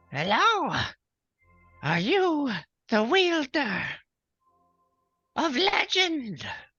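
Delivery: very high, sing-song, swooping unicorn creature voice. Acting out a unicorn greeting him: unicorn speaking in his voice. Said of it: "speaks in his name, uh, or in, in his, uh, voice".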